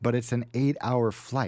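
ordinary talk

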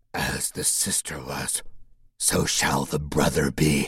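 thick, low, slow voice through phlegm-filled mouth. Reading a story, a creature that was once his sister speaks, phlegmy voice. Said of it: "It sounded like it spoke through a mouth filled with phlegm".

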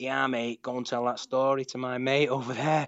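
put-on proper Manchester accent. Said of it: "in a proper Manc accent".

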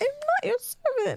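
very high, squeaky rat voice. Narrator reading a story, Peter answering Snape, in a squeaky Peter voice. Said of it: "He squeaks it, which is very rat like".

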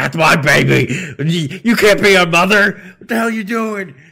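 very loud, shrill scream. Retelling a game scene, imitating Ethan screaming at Mother Miranda. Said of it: "screaming at her".

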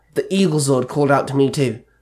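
plain reading voice

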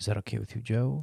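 put-on soft ASMR voice. Joking at the start of an episode, fake ASMR soft voice. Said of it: "talking into the mic like this. A little bit of a A S M R action".

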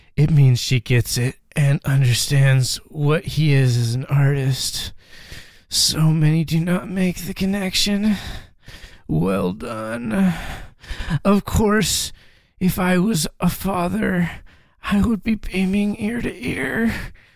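eerie, unsettling, creepy reading voice. Reading aloud a comment that creeps the reader out, in a creepy voice. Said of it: "I'm gonna read this in a creepy voice".

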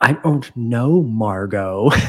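acted annoyed, very slow, drawn-out delivery. Retelling how a man answers a woman's question, acting all pissed off. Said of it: "he's all pissed off".

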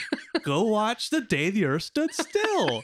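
high, laughing, mocking voice.

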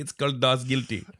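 soft Indian accent slipping through. Telling others a title, the speaker slips into an accidental indian accent. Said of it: "I said it in a friggin' Indian accent".

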